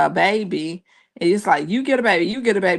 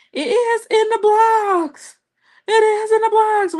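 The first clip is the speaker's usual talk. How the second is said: very high, shrill, insistent raised voice, acted out; 4 dB louder than usual. Retelling a reality show argument, imitating someone raising her voice. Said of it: "raising her voice".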